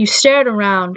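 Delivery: ordinary delivery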